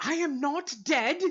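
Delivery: loud, very high, tiny squeaky mouse voice. Describing a scene where a dead mouse peeks out of a pocket: tiny squeaky mouse voice. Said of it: "you hear a tiny squeaky voice".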